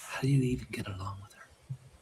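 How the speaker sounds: soft, hushed whisper, up close. Asking another character, up close, how he gets along with his wife: whispering. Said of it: "and I whisper real close".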